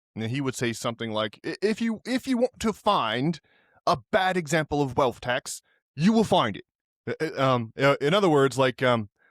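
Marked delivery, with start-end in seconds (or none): 1.5-6.7 put-on ridiculous, pitched-up East London Cockney accent. Imagine what Gary would say if he were here, in Gary's ridiculous East London Cockney accent. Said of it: "his ridiculous East London Cockney accent".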